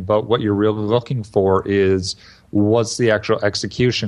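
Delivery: ordinary delivery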